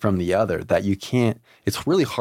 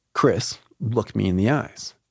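harsh, mean-edged, bossy, acted out. Retelling what a physician at your hospital bedside said to you, imitating a mean tone. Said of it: "she was kind of mean about it".

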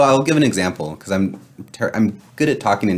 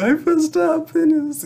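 mock tearful crying, voice pitched very high. Quoting what she said after he yelled at her, imitating someone crying. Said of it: "she's like crying".

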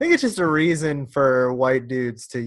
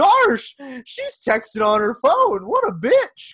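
very high, loud, squeaky, swooping cartoon dog voice; 11 semitones higher, 5 dB louder than usual. Act out how you talk to yourself in your car to calm down, in a Goofy voice. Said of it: "In that accent?".

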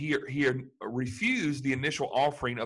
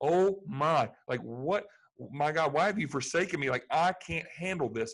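imitated anguished, despairing cry; 3 semitones higher than usual. Retelling a cry from the cross: imitating anguished despair. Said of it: "he's feeling that God has forsaken him".

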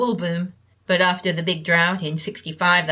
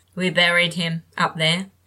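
usual speaking voice

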